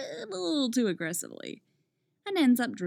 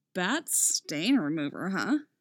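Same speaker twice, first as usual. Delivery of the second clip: ordinary delivery, nothing marked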